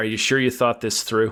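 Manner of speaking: easygoing, unruffled, very calm and friendly tone. Retelling a scene, quoting Dalton's reply: imitating Dalton's calm friendly tone. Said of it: "in his very calm, like friendly tone of voice".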